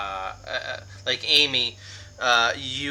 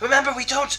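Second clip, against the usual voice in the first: loud whisper yell, higher; 14 semitones higher, 4 dB louder than usual. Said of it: "trying to yell, like, whisper yell".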